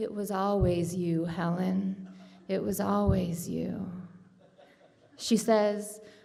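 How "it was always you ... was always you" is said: menacing villain voice. Speaker acts out Wendy coming out with her bat swinging, in a Candyman voice. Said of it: "in her best Candyman voice".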